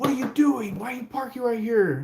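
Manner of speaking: mock angry, mad cop voice, pitched very high. Retelling how a cop got out of his car: imitating an angry cop. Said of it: "he gets out of his car all mad".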